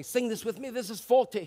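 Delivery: put-on Irish accent with rock-star delivery. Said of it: "That's what he'd say in his Irish accent".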